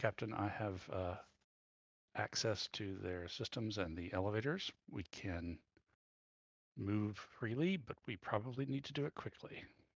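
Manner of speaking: muttered under the breath. In character, reporting to the captain, muttering under breath. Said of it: "I like mutter under my breath".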